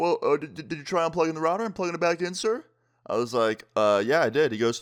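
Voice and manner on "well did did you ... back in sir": polite customer-service voice, pitch raised. Retelling a call about your internet not working, playing the provider's guy in a Mr. Mackey voice. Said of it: "making this guy's voice sound like Mister Mackey".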